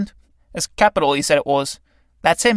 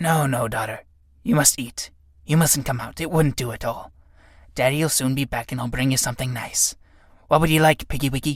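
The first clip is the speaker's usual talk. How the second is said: low, soft, fond doting-father voice, gently soothing; 6 semitones lower, 5 dB quieter than usual. Reading a play aloud, voicing the fly father to his daughter: Ichneumon fly character voice. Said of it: "Enter Ichneumon fly, dragging the corpse of a cricket to its lair. Ichneumon fly. Look, larva, Daddy's bringing you something nice. / Daddy's bringing you something nice".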